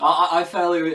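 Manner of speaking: loud mumble, words pushed out through a yawn. Recommending a film on a podcast after a long day, yawning. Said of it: "I'm not yawning because".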